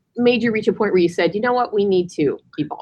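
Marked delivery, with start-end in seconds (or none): none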